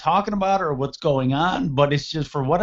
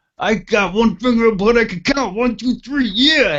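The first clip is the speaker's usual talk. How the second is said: loud, belted, pitched-up wrestling promo voice; 6 semitones higher, 6 dB louder than usual. Retelling a wrestling promo, counting on one finger: Macho Man voice. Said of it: "little nuances of, of, uh, Macho Man talking".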